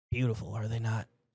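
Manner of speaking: called out with a gurgle. A narrator voices Bouchard calling out from the entry door, gurgling Bouchard voice. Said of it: "A gurgling voice calls out".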